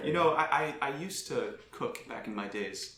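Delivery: quiet, soft, slow mumbling under the breath. Voicing a character recalling cooking days: soft mumbling to herself. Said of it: "Taga softly mumbles to herself".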